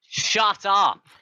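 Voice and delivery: shrill, very high, loud outburst yell. Telling another speaker to be quiet: yelling at someone. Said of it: "I'm just yelling at him".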